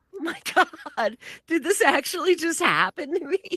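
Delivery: very high, stunned disbelief. Retelling sitting there after nobody on the street reacted, retelling own stunned disbelief. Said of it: "And I'm just sitting there like".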